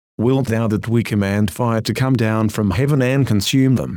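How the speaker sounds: ordinary delivery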